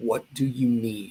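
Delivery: grave, dead-serious, suddenly serious tone. Retelling a stranger's question after he got real serious: imitating someone getting serious. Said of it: "he got real serious".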